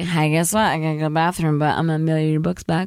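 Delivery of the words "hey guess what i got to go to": ordinary delivery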